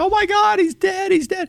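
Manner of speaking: put-on repeated screaming at very high pitch. Retelling her finding him in the snow: imitating someone screaming. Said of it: "starts screaming".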